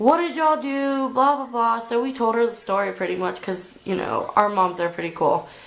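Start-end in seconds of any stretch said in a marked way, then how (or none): 0.0-1.1 higher, mild mock scolding yell. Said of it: "they're yelling at us".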